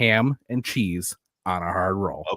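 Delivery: fake, overly precise articulation. Quoting how she said it after she came off as fake, imitating her fake-sounding enunciation. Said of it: "she was enunciating... it just came off as fake".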